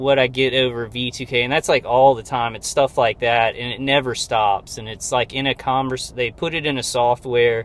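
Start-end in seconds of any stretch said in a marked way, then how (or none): none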